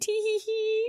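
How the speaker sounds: very high little giggle. Retelling a game scene where onlookers react: imitating giggling characters. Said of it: "the Scions are all like".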